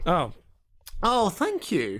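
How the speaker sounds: nasally, sing-song, swooping voice. Realising the compliment was about their music, thanking the others, nasal. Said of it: "Why do you sound so nasally there?".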